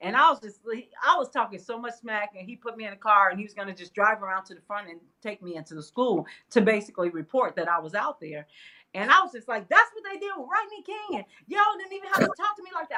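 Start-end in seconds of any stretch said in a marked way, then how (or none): 9.7-13.0 high, fast sassy mouthing off. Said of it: "I was just really coming for him".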